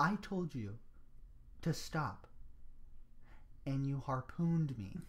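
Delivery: soft, flat, dead-straight deadpan delivery. Retelling a woman's reply to the man who apologized: retelling a straight deadpan. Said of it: "she deadpan, just deadpan straight".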